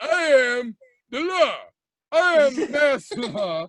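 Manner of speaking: slow, drawn-out action-hero drawl. Turning into an action movie star enforcing masks: Stallone voice. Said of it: "I'll turn into Stallone".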